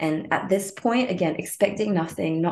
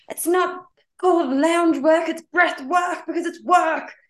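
very high, shrill, full-on hectoring yell; 10 semitones higher, 4 dB louder than usual. Retelling a breathwork session where an ex-football coach yelled at them: imitating a coach yelling. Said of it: "He's just like yelling at us".

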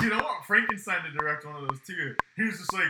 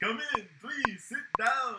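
very slow, high-pitched, each word stretched out; 7 semitones higher, 3 dB quieter than usual. Imagining a scene and voicing the character: Dracula voice. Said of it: "and he's just like".

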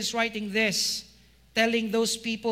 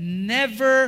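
never strongly stressed, hit hard; 6 dB louder than usual. Reading a Bible verse aloud to the congregation: stress on NEVER. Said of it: "Emphasis on that word, never".

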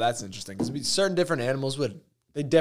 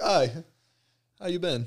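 put-on British-accented character voice; 4 semitones higher than usual. Imagining how a dolphin would greet someone, in a British accent. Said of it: "would have like a British accent and be like".

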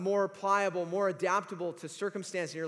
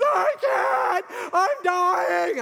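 put-on very high, drawn-out wheezing and crying; 12 semitones higher, 10 dB louder than usual. Retelling what Adam said while running around the backstop, imitating Adam wheezing and crying. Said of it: "he's wheezing and he's crying".

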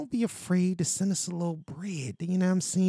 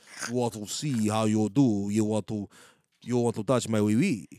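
throaty French accent from the throat; 8 semitones lower than usual. Showing how the french way of talking goes, french accent from the throat. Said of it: "it's coming from the back of your throat".

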